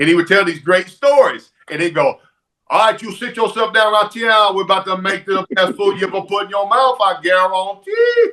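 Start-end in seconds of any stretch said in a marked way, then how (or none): 2.7-8.3 put-on Cajun accent, pitched higher. Imitating a Cajun TV cook telling a story: Justin Wilson Cajun voice. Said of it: "this Cajun cook that would come on".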